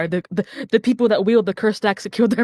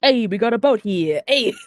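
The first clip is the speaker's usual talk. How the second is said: put-on New York accent. Voicing the dwarves after the game master gives them accents: New York accent.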